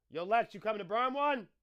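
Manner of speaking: very high-pitched, loud shout. Speaker calls out to someone, yelling. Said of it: "I'm sorry for yelling".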